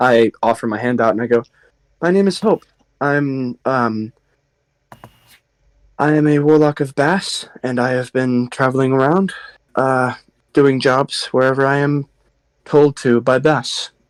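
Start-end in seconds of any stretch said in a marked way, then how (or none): 2.0-13.9 put-on, Anglian-sounding British accent. Introducing the character hope to a stranger in character: british accent. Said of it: "you do hear she's speaking with an Anglian accent".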